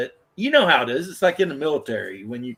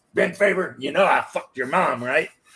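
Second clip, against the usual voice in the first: put-on gruff voice. Doing a requested impersonation of Mac swearing: imitating Mac's gruff voice. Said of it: "Mac would just show up and be like".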